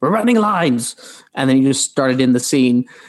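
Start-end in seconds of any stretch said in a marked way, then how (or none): 0.0-1.0 put-on abrupt, high-pitched, sudden announcer shout. Retelling how a co-star announced a rehearsal: imitating someone yelling.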